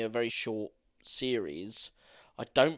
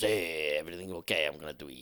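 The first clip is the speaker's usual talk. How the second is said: goofy put-on voice, much lower pitch; 8 semitones lower than usual. Giving the quick version of an Assassin's Creed Lineage scene, in a silly voice. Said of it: "It's a silly voice".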